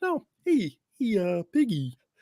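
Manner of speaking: high-pitched frog puppet character voice. Doing a bit addressing Piggy, in a Kermit the Frog voice. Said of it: "Kermit voice".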